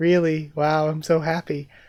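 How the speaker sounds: flat monotone, every word held on one pitch. Recounting a story's dialogue, the speaker gives Kinosaki's reply in a monotone Kinosaki voice. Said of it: "monotone Kinosaki".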